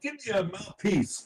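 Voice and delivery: loud calling out, high-pitched and hard. Playing a prisoner banging a tin cup on the bars: yelling in character. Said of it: "I'm yelling".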